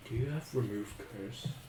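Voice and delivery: very quiet, slow, hushed half-whisper. Asking another character quietly about a curse, in character: half-whispering. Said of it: "I whisper to Amelia".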